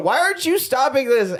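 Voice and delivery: high-pitched yell. Retelling a movie scene at a locked door: imitating Armand yelling. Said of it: "Armand's yelling through the door".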